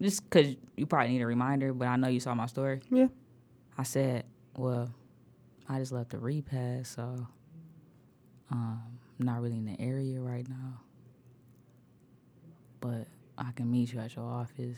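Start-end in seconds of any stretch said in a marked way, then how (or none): 4.6-14.7 soft, very somber, play-acted grave tone. Retelling their own reply after leaving a repast, in a somber voice. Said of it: "I said this in a very somber voice".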